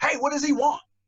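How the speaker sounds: very high yell with attitude. Probation officer retells a judge yelling across the courtroom, retelling a yell with attitude. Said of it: "the judge yells across the room with an attitude".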